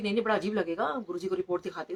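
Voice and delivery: ordinary talk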